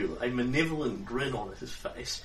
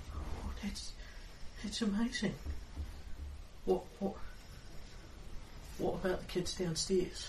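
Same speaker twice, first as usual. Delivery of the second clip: put-on street urchin kid voice, higher and quieter; 6 semitones higher, 8 dB quieter than usual. Game master voicing a child the players came to get out, in an urchin kid voice. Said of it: "I need my urchin voice".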